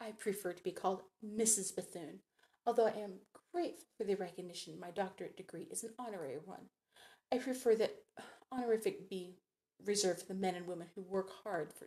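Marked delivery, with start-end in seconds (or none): none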